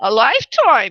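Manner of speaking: Brooklyn-accented delivery. A New Yorker saying the phrase again, in a Brooklyn accent. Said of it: "say it with the Brooklyn accent".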